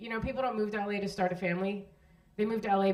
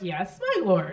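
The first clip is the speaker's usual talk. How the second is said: raised voice, heavy mock sarcasm, falsely obedient tone; 5 dB louder than usual. Acting out addressing a husband as my lord: imitating sarcastic wife. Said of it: "it would be rife with sarcasm".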